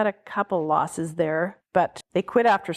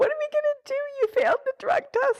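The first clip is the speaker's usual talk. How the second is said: acted-out wailing sobs, very high-pitched, bawling through tears. Retelling a teammate's call back about the failed test: imitating someone bawling. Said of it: "Heather is bawling".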